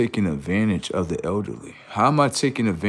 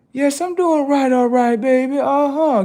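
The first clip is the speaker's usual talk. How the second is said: put-on elderly old lady voice, higher and louder; 6 dB louder than usual. Acting out a skit where Miss Granny answers: put-on elderly grandma voice. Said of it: "go walk up to Miss Granny like".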